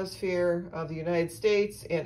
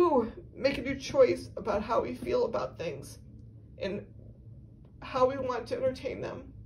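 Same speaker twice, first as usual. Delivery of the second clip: moved, emotional speech, pitched up; 6 semitones higher than usual. Pausing to apologize mid-talk, getting emotional. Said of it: "I'm getting emotional".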